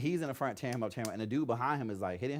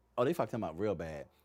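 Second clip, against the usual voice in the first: normal talking voice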